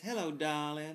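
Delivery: put-on Southern US accent. Retelling how a crew cook from the South talked: imitating Sandy's Southern accent. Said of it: "she talked like this".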